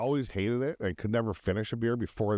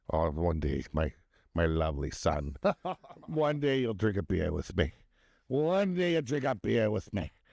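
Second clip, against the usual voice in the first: put-on Scottish-accented voice. Retelling a father's words to his son, in a scottish accent. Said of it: "You did a Scottish accent for for Irish dad".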